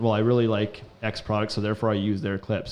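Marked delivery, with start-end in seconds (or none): none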